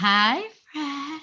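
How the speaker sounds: tiny, sweet, high, little put-on voice. Retelling how a woman greeted a man, in her little voice. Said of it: "in her little voice".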